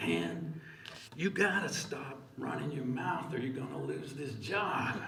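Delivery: low, hushed, muttered voice. Retelling the warning someone kept repeating when the speaker defied power, in a low voice. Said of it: "repeating in a low voice".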